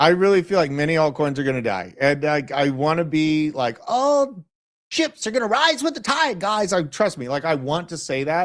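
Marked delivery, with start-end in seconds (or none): 3.9-6.7 high, scrawny, pencil-neck voice. Speaker in a crypto discussion, putting on a pencil-neck guy voice. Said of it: "That was a good pencil neck voice".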